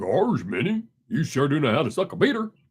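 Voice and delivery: cartoonish voice swung around. Talking to an audience that keeps leaving, switching into a Goofy voice. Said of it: "I could do my my goofy voice".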